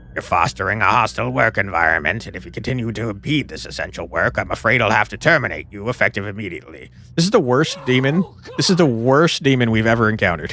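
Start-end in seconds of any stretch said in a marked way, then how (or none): 0.1-6.9 flat, low, droning growl in monotone. A narrator reads a demon's line addressed to the narrator: low growling monotone. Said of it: "it growled in a low monotone".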